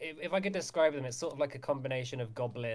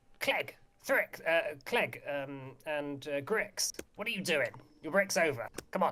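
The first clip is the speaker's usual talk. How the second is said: put-on kobold creature voice. Narrating a scene, voicing someone calling from down the corridor: kobold voice. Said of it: "I know you're doing a kobold to be voiced".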